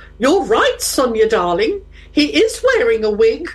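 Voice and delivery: put-on voice at the very top of her range. Retelling what her mum said to her at the back of a church, in a top voice. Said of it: "in a top voice".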